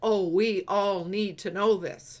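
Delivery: ordinary talk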